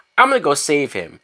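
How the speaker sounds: ordinary talk, nothing marked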